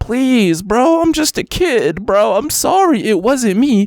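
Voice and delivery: mock abject pleading, very high, drawn-out. Reacting to a video of a kid on a boat, imitating someone begging. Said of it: "literally begging him".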